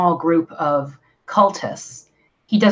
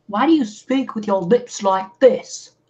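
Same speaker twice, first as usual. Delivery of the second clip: put-on faint mimicked British accent; 5 semitones higher than usual. Complaining about a man's lips, speaker mimics how he talks, slightly British-sounding. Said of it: "You sounded a little bit British".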